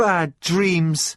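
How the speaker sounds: sulky, grudging, slightly high voice. Reading a story aloud, voicing a character answering her master: sulky.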